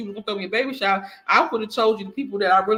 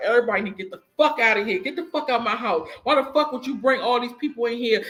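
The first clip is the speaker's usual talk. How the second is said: put-on angry outburst, going off; 3 semitones higher than usual. Retelling how he reacted to a surprise party: imitating someone going off on everybody. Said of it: "He just started kirking on everybody".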